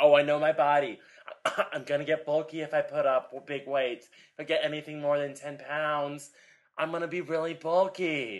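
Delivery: awful fake girly voice. Speaker acts out women afraid of lifting heavy weights, in a put-on girl voice. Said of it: "I love your girl voice".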